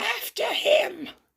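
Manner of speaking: very high, rough robot-villain screech. Showing off a transformed toy, the speaker does a Starscream impression. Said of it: "That was my best impression of the G one".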